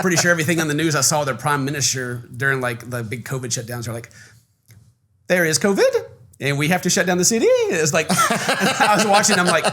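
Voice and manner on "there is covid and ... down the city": "city" lifted with rising, question-like tune. Imitating a prime minister announcing COVID shutdowns, rising at the end like a question. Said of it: "you got to speak with an up, upward inflection too. Like everything's going to be a question".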